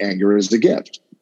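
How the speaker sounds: plain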